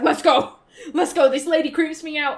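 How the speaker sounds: mock panicked voice. Retelling how he reacts after she says he'll lose his arms and eyes, imitating panic. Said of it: "And he starts panicking".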